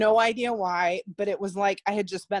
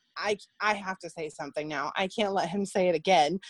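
ordinary talk

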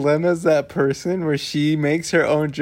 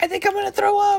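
put-on high, squeaky small-child voice. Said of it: "a little kid's like".

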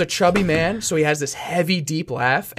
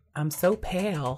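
small, soft, silly put-on voice; 2 semitones higher, 8 dB quieter than usual. Retelling a newscaster who didn't know she was live: little put-on voice. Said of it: "she makes a little voice".

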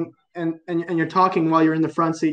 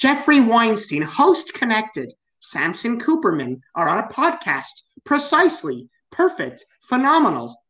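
put-on high, sing-song newsreader voice; 5 semitones higher than usual. Imitating how a woman who sounds like a Karen talks for the news. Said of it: "Like she talks like that".

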